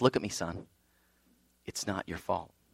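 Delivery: calm, hushed, near-whispered voice. Telling a story, the speaker acts out one man answering Kevin, retelling a calm reply. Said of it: "he calmly responds".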